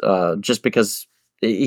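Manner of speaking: normal talking voice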